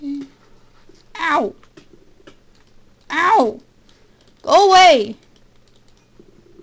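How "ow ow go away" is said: loud, high scream. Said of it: "Sorry for screaming".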